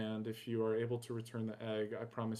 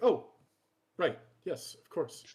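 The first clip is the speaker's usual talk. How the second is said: flustered, pitched-up, embarrassed caught-out tone; 6 semitones higher, 7 dB louder than usual. Retelling how a mom answered when asked to rest, acting out flustered embarrassment. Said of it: "a blush come across her cheeks".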